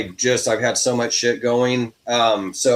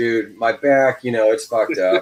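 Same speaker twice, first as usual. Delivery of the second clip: ordinary talk, nothing marked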